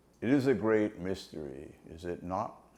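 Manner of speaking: grave, slow pronouncement, unhurried. Recall what Prabhupada said during a pause, before everybody went quiet, in the grave voice of Prabhupada. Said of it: "In the grave voice of Prabhupada".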